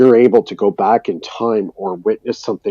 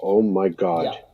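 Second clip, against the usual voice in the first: put-on nervous panic, quieter; 5 dB quieter than usual. Retelling own words during a miniature nervous breakdown: retelling own nervous breakdown. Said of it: "miniature nervous breakdown".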